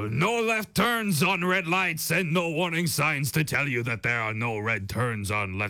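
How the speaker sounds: put-on French-accented English. Reading a listener's message about driving in Montreal: French accent. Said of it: "that's my French accent".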